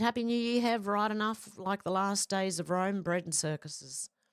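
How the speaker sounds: ordinary delivery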